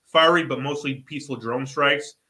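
ordinary talk

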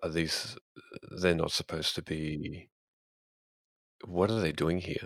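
hushed, kept-down talk. A player's character, seeing wandering zombie-like figures, asks about them in a lowered voice. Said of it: "I'll just lower my voice and say".

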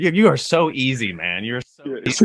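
high, teasing, laughing taunt. Retelling how Tyson popped up in the van, imitating Tyson laughing. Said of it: "he's just busting up laughing at me like".

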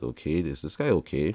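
normal talking voice

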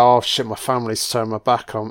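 normal talking voice

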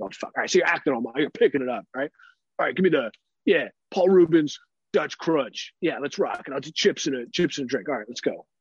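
serious, manly macho voice. Retelling ordering a sandwich from the workers: imitating own manly macho talk. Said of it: "serious, like, manly macho talk".

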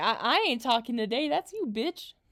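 normal talking voice

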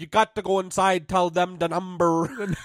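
odd put-on Dutch accent. Retelling what a guy told him, in a weird Dutch accent. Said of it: "this weird like Dutch Holland accent".

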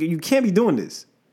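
ordinary talk

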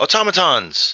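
alarmed, startled shout, pitched very high. Voicing a dwarf surprised by the party in a game, give a startled shout. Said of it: "the dwarf is now startled and shouts out".

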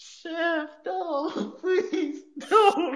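very high, drawn-out, sobbing pleading voice. Retelling a match where his opponent nearly puts his eye out, imitating Rey crying and begging. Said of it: "he's crying like a bitch".

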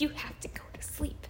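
high-pitched, mocking whisper.

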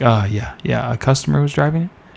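mock calm, even-keel, matter-of-fact, unbothered. Retelling a coworker calmly reporting a car fire: imitating a calm colleague. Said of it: "R J was so calm about it".

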